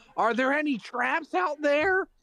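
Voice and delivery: very high, shrill shouted yell. A game player's character checks for traps while calling out, yelling. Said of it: "I'm just gonna yell".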